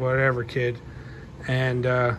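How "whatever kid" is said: plain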